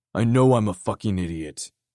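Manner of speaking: bitten-off words. Reading a novel aloud, voicing a character's retort: spat out. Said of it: "Dare spit out".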